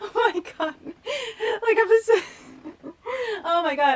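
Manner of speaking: very high, slow words through helpless laughter. Watching a film scene and remembering the past: laughing hard while talking. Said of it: "I'm sorry I'm laughing so hard".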